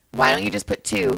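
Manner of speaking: usual speaking voice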